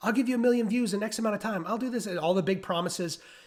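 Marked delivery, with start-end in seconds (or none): 0.0-2.1 play-acted, high, hyped huckster sales-pitch voice. Imitating marketers making big promises: imitating marketers yelling. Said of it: "People are sitting there yelling".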